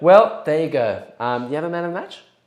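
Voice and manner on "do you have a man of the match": very fast, rushed speech with words run together. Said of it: "Maybe I say it too fast".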